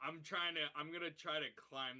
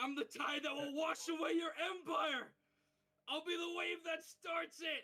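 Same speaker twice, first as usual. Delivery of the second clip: very high-pitched, worked-up, frantic freak-out; 14 semitones higher, 4 dB louder than usual. Playing the captain of the Freewind Pirates in front of chat, freaking out. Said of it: "freaking out".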